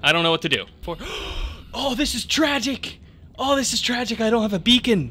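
flustered, high, full-on panicked fretting. Player addressing everyone during a game, panicking. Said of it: "I'm panicking".

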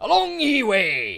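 loud, high pirate voice. Reading game text aloud, talking like a pirate. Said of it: "sorry, Nathan, for talking like a pirate".

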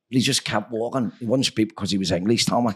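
plain

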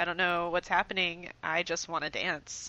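ordinary delivery

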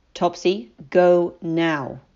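cold, unyielding tone. A master gives an order to his weeping servant, cold and firm. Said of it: "His voice was cold and firm".

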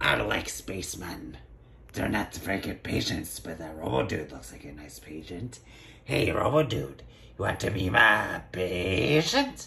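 low, crazed, insane doctor voice. A doctor character looking for a patient, in an insane doctor voice. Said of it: "the most insane doctor yet".

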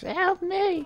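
very high-pitched, shrill, squealing scream. Retelling someone heard screaming for help: high-pitched scream. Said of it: "In a really high-pitched voice".

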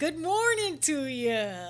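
slow, drawn-out cartoon voice with big pitch swoops. Trying out a sound you have almost down pat, in a Goofy voice. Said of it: "I've got his sound almost down pat".

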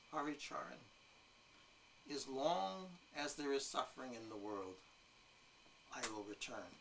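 quiet, weighty voice with great gravitas. Retelling what he said to you after a massive silence in the room, imitating his great gravitas. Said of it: "with great, you know, gravitas".

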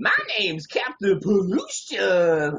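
slow, swooping, sing-song surfer-dude drawl. Recalling a cartoon villain, the speaker does Captain Pollution's bad surfer voice. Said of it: "really bad like stereotypical like surfer like voice".

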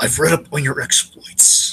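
slow, unhurried crime-boss voice, weighing each word. Retelling a scene where Fisk greets a strong-armed guest, Fisk impression. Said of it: "your Fisk impression is so distinct".

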